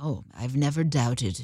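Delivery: put-on British accent. Joking about being a hypocrite who never doubted: put-on British accent. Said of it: "With a British accent".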